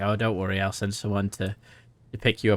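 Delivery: plain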